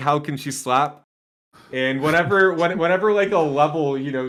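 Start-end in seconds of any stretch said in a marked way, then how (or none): none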